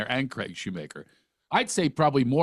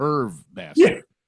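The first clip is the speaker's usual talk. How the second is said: plain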